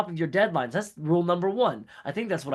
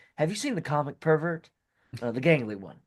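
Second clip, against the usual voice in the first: offhand, low-key, casual tone; 2 semitones lower than usual. Voicing a reporter asking each coworker about a missing colleague: asking quietly. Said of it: "quietly ask".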